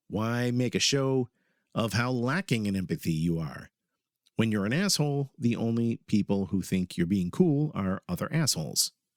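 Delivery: ordinary talk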